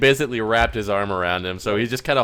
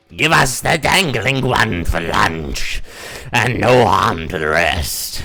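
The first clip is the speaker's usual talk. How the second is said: weird, slow, undulating rising-and-falling voice; 3 semitones lower, 4 dB louder than usual. Voicing a creature that looks over at a player: weird undulating voice. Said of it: "this weird kind of undulating voice".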